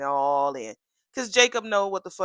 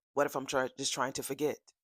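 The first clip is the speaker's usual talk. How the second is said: put-on quick-talking voice, lower and quieter; 4 semitones lower, 7 dB quieter than usual. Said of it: "I'm gonna have to talk like that. Like Isaiah".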